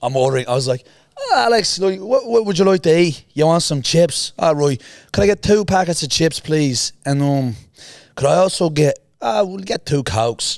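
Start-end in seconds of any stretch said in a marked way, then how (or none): 1.2-10.6 put-on Irish accent, pitched up. Retelling a teenage prank on a train: fake irish accent. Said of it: "So I'm pretending to be Irish".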